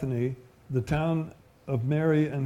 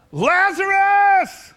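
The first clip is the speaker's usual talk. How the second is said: very loud, very high-pitched commanding shout; 10 dB louder than usual. Sermon retelling Jesus calling out with a loud voice, shouted Lazarus. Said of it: "He said it with a loud voice, probably louder than I just did".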